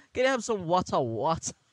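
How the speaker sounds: put-on British accent. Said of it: "galing siya sa British accent na word na water".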